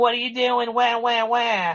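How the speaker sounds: very high-pitched whining. Retelling a wrestler confronting another: imitating Aaliyah whining. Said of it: "Aaliyah ran up to Buddy going".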